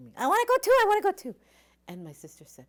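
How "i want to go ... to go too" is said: put-on very high, very loud, shrill little-kid screaming. Retelling being three and begging to go to a party: imitating own childhood screaming. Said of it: "I started screaming".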